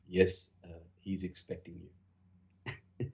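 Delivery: straight-faced, very slow, deadpan delivery. Recalling arriving for a meeting, quoting the man at the door, retelling a deadpan reply. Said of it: "this guy deadpan at the door said".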